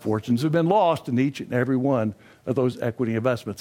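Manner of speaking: stress on the word lost. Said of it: "What's the corollary?".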